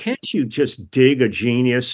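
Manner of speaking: ordinary talk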